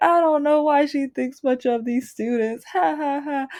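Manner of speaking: high, mocking, laughing through the words. Retelling a woman's remark heard on a classroom recording, imitating her mocking laugh. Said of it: "she was laughing".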